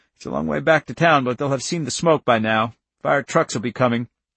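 ordinary delivery

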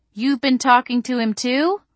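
wary, doubting tone. Reading the narrator questioning someone who has talked to both sides, asking suspiciously. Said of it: "I asked suspiciously".

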